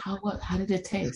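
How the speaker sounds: mock whispering. Retelling what a sister whispered after a blunder: imitating a whisper. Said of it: "and she whispered it".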